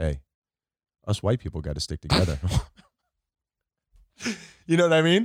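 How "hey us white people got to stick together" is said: low, deep, confiding, just-between-us tone. Retelling leaning close to a woman's ear, saying it really quietly. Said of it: "really quietly, so only she could hear".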